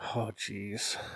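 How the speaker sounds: put-on Brooklyn accent. Talking about accents with a friend, trying the Brooklyn one: Brooklyn accent. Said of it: "Like that".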